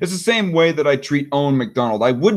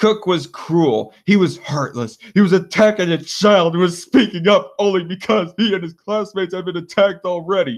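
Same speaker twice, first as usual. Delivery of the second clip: play-acted, derisive, scornful, mocking sneer voice; 4 semitones higher than usual. Speaker quotes critics' claims, in a put-on mocking voice. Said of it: "I put on the mocking voice".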